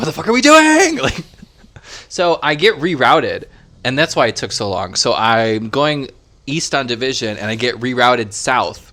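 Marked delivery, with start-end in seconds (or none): 0.0-1.0 very high, shrill, rushed, frustrated scream. Telling about getting rerouted while driving home; retelling screaming in the car. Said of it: "I'm screaming".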